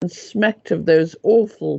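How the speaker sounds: ordinary delivery, nothing marked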